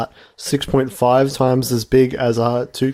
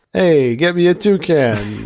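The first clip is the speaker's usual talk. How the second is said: put-on Boston mobster accent, very slow and tough; 3 semitones higher than usual. Mimicking someone from boston in conversation, boston mobster-style accent. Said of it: "I was gonna say a mobster".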